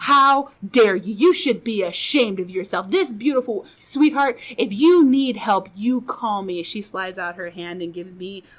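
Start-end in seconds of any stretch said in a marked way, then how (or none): 0.0-6.6 loud, furious, unhinged ranting outburst. Retelling a stranger's outburst at the husband: imitating an unhinged outburst. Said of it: "she is coming unhinged".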